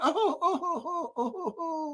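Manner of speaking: faint, very high, soft fake whimpering sobs. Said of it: "I'm crying right now".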